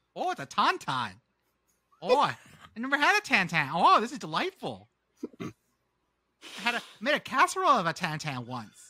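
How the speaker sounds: put-on sing-song Minnesota accent. Answering a request to describe tauntauns: Minnesota accent. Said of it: "Can you do that in a Minnesota accent".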